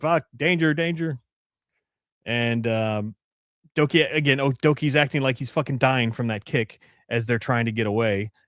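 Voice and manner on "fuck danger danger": put-on robot screaming voice, higher. Retelling a show scene where the spy bot screams: imitating a spy bot screaming. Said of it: "the spy bot screaming".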